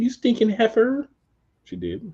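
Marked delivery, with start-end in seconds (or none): 0.0-1.1 very high, put-on Valley Girl voice. Voice what Liv's look said, in a Valley Girl voice. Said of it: "said in a Valley Girl voice".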